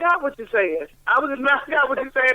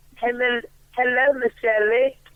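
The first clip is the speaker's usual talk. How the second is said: attempted put-on British accent. Asked on air to greet a listener in their best accent, doing a british accent. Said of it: "You will make an absolutely fabulous Brit".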